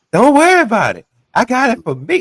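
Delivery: mocking put-on voice, very high. Retelling what she said about the figure: mocking her voice. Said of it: "mocking her voice like that".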